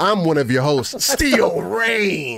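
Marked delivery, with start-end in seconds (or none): 1.0-2.4 slow ring-announcer call with "Rain" stretched out. Introducing oneself as one of the hosts: WWE announcer voice. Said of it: "I feel like a W W E announcer right now".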